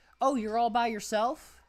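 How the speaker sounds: very loud, high-pitched, carrying voice. Retelling what a cashier said to an armored truck guard: imitating a loud remark. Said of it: "really loudly to this dude".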